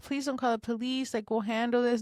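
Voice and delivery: mock weepy, tearful, crying voice. Telling the host about the neighbor who hit their car, imitating someone crying. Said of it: "first she was crying like".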